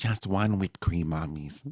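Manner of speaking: eerie, unsettling put-on voice. Imitating how the mailman sounds to the speaker: creepy put-on voice. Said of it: "it sounds so creepy".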